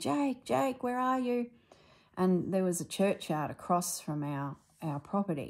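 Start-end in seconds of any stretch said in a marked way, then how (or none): 0.0-1.5 mock, high, full-voiced shout at top of voice. Telling of searching for someone, the speaker re-enacts calling out, retelling a shout at top of voice. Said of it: "at the top of my voice going".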